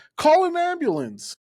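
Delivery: very high, shrieked scream. Retelling standing up at a wrestling show and screaming: retelling a scream. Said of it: "I stand up and scream".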